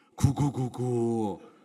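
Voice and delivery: cooing like a pigeon.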